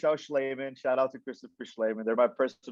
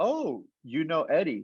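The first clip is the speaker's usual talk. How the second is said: usual speaking voice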